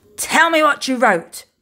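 insistent, loud, high pirate captain voice. A pirate captain, his crew soaked after a failed search, confronts a girl, demanding. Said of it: "Captain Firebeard demanded".

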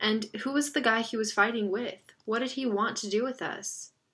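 ordinary delivery

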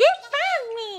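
squeaky creature voice, very high and very loud. Player during a game, teased by a co-player: Korok voice. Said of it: "your Korok voice gets less and less".

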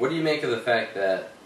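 ordinary delivery

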